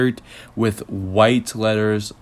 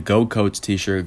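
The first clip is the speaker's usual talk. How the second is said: ordinary delivery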